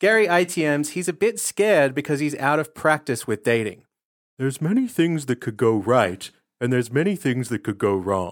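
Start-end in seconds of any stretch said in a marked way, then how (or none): 4.4-8.3 very calming, soothing, gentle and reassuring voice. Quoting a dating contestant's confession about dating: imitating Gary's very calming voice. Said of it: "you don't know that he talks like this".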